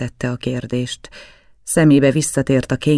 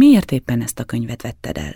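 ordinary delivery, nothing marked

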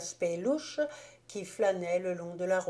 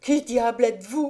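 loud, frightened, gasping voice; 4 semitones higher, 7 dB louder than usual. Narrator reads a terrified man grabbed by the shoulder in a car; gasped.

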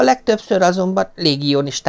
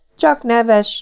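affronted, offended, pitched-up voice; 8 semitones higher, 3 dB louder than usual. The Corporal answers the Marquis's laughing question about the garrison ghost, sounding offended. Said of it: "felelte sértődötten Lucien Káplár".

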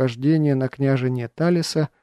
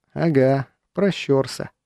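plain reading voice

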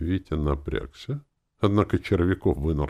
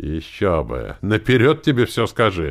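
snide, sneering; 4 semitones higher, 7 dB louder than usual. A character cuts into the group's conversation, snide. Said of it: "вставил ехидно Червяков".

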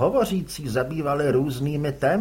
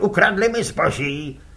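mild, cried-out, aggrieved outcry; 4 semitones higher than usual. Reading a story aloud, voicing another orator in the crowd, shouting. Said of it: "vykřikoval".

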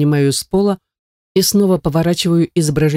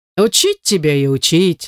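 slow, swooping, laughing delivery. The narrator's friend and co-director teases him as he picks up cards: laughing. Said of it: "смеется друг".

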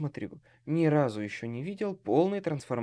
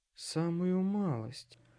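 mumbled, muttered under the breath; 2 semitones higher, 4 dB quieter than usual. A narrator reads Lea's reply to the speaker's excuse, muttered. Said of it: "пробормотала Леа".

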